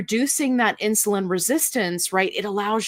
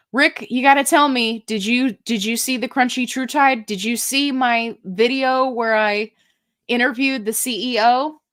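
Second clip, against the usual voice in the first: worked-up, insistent, eager, urgent tone; 4 semitones higher than usual. Speaker calls out to Rick about his video, yelling. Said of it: "I don't know why I'm yelling".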